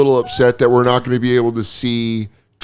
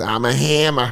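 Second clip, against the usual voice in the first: put-on Boston accent; 3 dB quieter than usual. Retelling what a comedian said after a show: imitating Bobby's Boston accent. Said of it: "That's all in his Boston accent".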